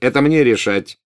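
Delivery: curt, snapped, cutting, final-sounding. Malfoy cuts off the other speaker's suggestion, snapped curtly. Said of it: "отрезал Малфой".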